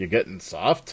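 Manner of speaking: scornful, derisive scoff. Peter answers his fellow soldier Raven, scoffing. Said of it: "Peter scoffed".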